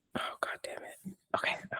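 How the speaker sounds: whispering. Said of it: "I'm whispering".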